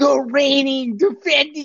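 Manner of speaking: high, shrieking, screaming announcer voice. Retelling a press conference impersonation: imitating someone screaming into a mic. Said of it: "he's screaming into the microphone".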